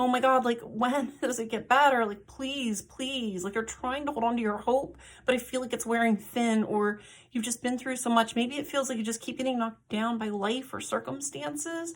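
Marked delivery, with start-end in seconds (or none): 0.0-3.4 put-on, desperate, pleading tone. Acting out someone begging the sky for things to improve: acting out desperate begging. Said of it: "to the sky and just begging".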